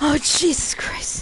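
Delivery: scared, frightened, afraid voice. Streaming a game and running from a threat, the player reacts scared. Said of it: "I'm so scared".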